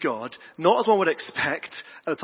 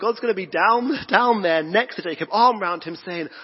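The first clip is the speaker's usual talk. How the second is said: plain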